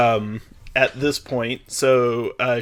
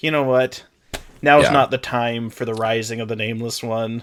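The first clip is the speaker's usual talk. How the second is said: ordinary delivery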